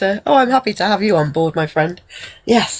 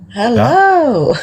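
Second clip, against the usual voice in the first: loud, bold, drawn-out delivery; 3 semitones higher, 5 dB louder than usual. Saying hello again when asked for a louder take: louder and bolder. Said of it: "A little bit more bold".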